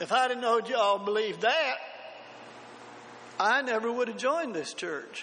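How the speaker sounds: put-on Deep South Mississippi drawl accent. Preacher retelling what an older man told him after church, in a Mississippi drawl. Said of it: "in his Mississippi drawl".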